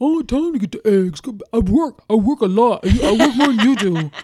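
put-on very loud, dismissive, excuse-making boyfriend voice. Acting out for a listener how he refuses to pay you back, do a Babe impression. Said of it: "That's good voice".

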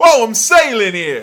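booming, loud, high put-on New York accent. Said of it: "He's got very New York kids".

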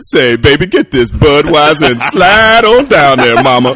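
loud exaggerated jive voice. Recalling commercial auditions, the speaker mimics the exaggerated jive voice they always wanted. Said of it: "they would always want that voice like".

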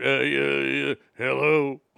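forced casual, innocent-sounding tone. Retelling answering the teacher's phone call home, trying to sound casual. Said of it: "And you try to sound".

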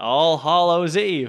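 mechanical, robotic delivery. Mimicking how the other speaker just said a word: robot voice. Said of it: "Like a robot".

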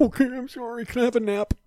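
very high, meek, apologetic voice. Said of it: "He's like".

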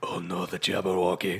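put-on abrupt, sudden switch into a Scottish accent. Mocking the actor's sudden switch when a dragon comes up: imitating Johnny Depp's Scottish accent. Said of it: "he'd immediately become Scottish in a second".

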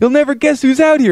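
high, thrilled, excited actor voice. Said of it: "He's like".

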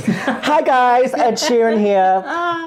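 flamboyant, very high, slow, very drawn-out camp voice. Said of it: "I put on a more camp voice for [name]".

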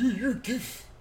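very high-pitched, soft troll voice. Voicing how the audience comments would sound, in an internet troll voice. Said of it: "That's the troll voice?".

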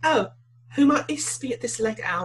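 put-on high young woman's voice with British accent. Redoing a line for a young woman's part, in a young British woman voice. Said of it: "a female British person's voice".

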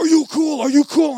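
shrill, very loud, high-pitched screaming. Retelling how a man with a gun screamed at them: imitating someone screaming. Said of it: "this guy screaming at me".

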